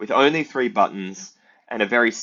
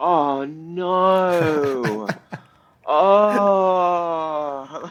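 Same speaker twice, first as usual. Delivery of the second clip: put-on upset, much higher pitch; 8 semitones higher than usual. Describing how older people reacted when they died at the puzzle, imitating someone really upset. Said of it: "like really upset".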